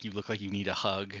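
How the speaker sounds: acted whispering. Retelling what a friend said during a screening: imitating a whisper. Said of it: "whispered something like".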